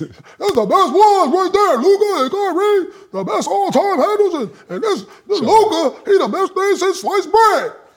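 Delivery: exaggerated, very high, overdone caricature voice. Teasing a co-host by imitating the co-host's voice. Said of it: "that's your voice".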